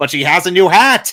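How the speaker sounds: high loud yelling.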